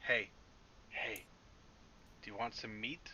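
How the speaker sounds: hushed whisper. A player speaks in character in Draconic, whispering. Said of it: "I'm going to whisper and say".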